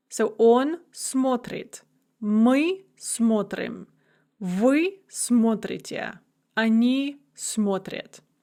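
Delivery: stress kept on first syllable смо- of смотрит, slow. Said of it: "it's going to remain there for the rest of the paradigm".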